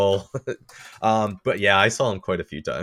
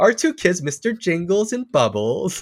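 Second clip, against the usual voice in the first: put-on pet-owner voice, much higher; 9 semitones higher than usual. Mocking how people talk about their pets as kids, put-on pet-owner voice. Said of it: "know why I'm using that voice".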